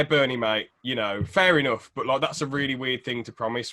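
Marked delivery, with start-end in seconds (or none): none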